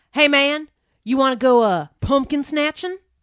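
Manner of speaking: very loud, booming, thick Southern drawl. Retelling what a guy from orientation said at his dorm, in a thick southern drawl. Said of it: "in a very thick southern drawl which i will try to do".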